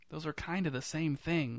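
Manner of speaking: quiet, hushed, voiced half-whisper, stage whisper. Bowing with the other actors beneath weak applause, an actor comments: half-whispered. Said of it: "whispered Jurassic Park".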